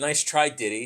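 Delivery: ordinary delivery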